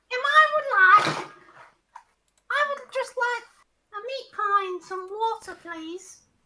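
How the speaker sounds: put-on gnome voice, very high and loud. Role-playing a gnome character, in a gnomish accent. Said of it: "I've got to put on a gnomish accent".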